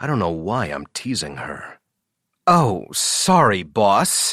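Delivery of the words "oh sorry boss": apologetic tone, said through a groan. Answering the boss after being woken up: groaning. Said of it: "she groans".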